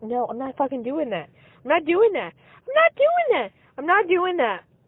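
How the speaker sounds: heated rant, pitch swinging and swooping around. Venting alone in a car: screaming to oneself. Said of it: "as I'm screaming this to myself".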